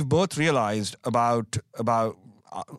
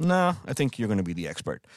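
mock-calm tone, much faster pace; 2 semitones lower, 3 dB quieter than usual. Retelling someone's answer to a colleague's hiring suggestion, retelling a calm reply. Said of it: "Tom very calmly said".

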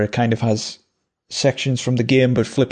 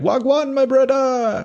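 very high-pitched game-character voice; 13 semitones higher than usual. Recalling a game character's entrance, imitating Wakka. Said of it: "Waka comes out and he's like".

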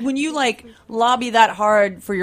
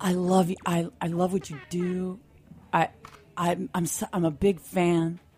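put-on seriousness, lower, quieter, slower; 4 semitones lower, 7 dB quieter than usual. The speaker retells what a stranger on the street said, imitating someone all serious. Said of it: "He was all serious".

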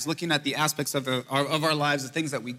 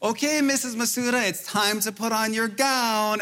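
mock bellowing yell, super loud and high; 8 semitones higher than usual. Retelling teasing his wife in the pre-op room: retelling a loud nurse act. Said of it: "And I'm super loud".

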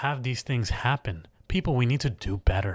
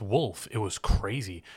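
normal talking voice

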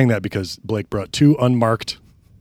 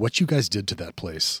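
plain

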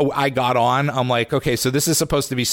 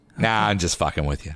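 ordinary talk

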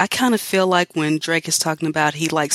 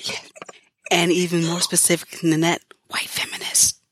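hushed, whispering voice. Naming who can catch the fade, whispering. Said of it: "Why are we whispering?".

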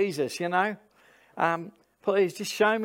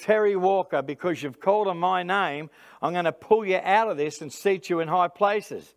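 ordinary talk

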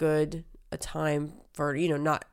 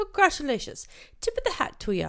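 bad fake Irish accent, very high, sing-song; 11 semitones higher than usual. Congratulating another show, joking: bad put-on Irish accent. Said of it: "Was that British?".

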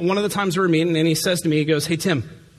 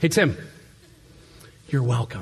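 quiet, close-in, hushed stage whisper; 6 semitones lower than usual. Retelling what someone half-whispered in his ear during a hug: imitating a half-whisper. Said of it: "he whispers in my ear".

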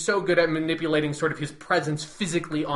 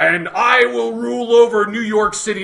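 put-on menacing villain voice, higher and louder; 6 semitones higher, 10 dB louder than usual. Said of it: "say them menacing in the way I said them in Daredevil".

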